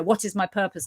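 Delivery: ordinary delivery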